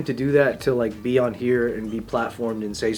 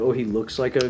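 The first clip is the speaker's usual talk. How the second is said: ordinary delivery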